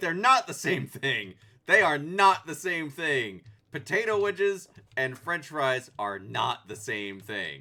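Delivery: put-on anger, very loud. Retelling getting fries instead of potato wedges: imitating own anger. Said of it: "I was mad".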